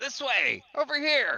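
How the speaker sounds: very high, loud shouting. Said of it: "Blink will yell out".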